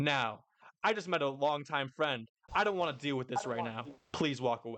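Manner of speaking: dead serious, stern tone. Retelling a scene where Shanks grips a pirate's shoulder: imitating Shanks's dead serious tone. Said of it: "he just is a dead serious tone in his voice".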